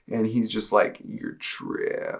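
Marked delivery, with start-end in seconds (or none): 1.0-2.2 creepy put-on demonic voice, lower and quieter. Retelling what a being said behind the shoulder: imitating a creepy demonic voice. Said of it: "the creepiest demonic voice".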